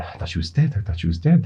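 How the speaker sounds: fast, dazed whisper in lost disbelief. Voicing the magistrate, who is completely lost in the scene: whispering. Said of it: "he just whispers out".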